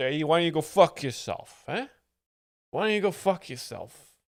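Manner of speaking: put-on laid-on, heavy New Jersey tough-guy accent. Describing a comedian who is playing: Andrew Dice Clay impression. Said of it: "He's like a tough guy character".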